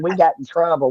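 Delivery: plain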